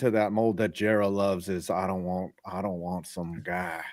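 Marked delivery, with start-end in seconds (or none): 1.7-3.8 put-on old man voice, lower and quieter. Quoting the team owner in a Jerry Jones impersonation. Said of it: "who had the better Jerry Jones impersonation".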